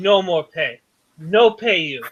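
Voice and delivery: low, contemptuous, distrustful, disgusted voice. Narrating the game, voicing Mr. Yi speaking to the player, disgusted Mr. Yi. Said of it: "Mr. Yi is looking at you with disgust".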